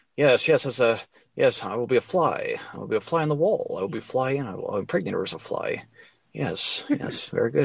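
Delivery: low, scheming, musing voice. Imitating an actor who schemes about playing a fly: Jeff Goldblum impression. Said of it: "that's a good impersonation".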